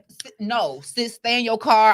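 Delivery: put-on, loud, frantic, panicked delivery. Acting out a phone call to a sister who stopped roadside: acting out panic. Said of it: "I'm panicking on the other side".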